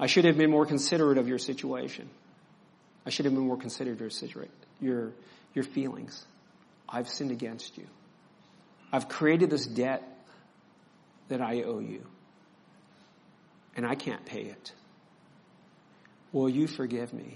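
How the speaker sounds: humble, pleading tone. Showing how asking for forgiveness sounds: asking forgiveness humbly. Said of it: "forgiveness sounds more like this".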